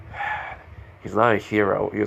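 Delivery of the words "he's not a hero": ordinary delivery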